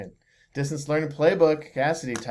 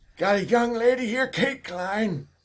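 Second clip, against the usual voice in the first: put-on elderly old man voice, pitched up; 8 semitones higher than usual. A host welcomes the returning guest to the episode in an Old Man Dawson voice. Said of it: "can go with Old Man Dawson".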